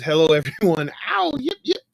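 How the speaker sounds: animated, bouncy, swooping sing-song delivery. Reading out a viewer's message to everyone, in Charles Share's voice. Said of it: "Had to do it in his voice".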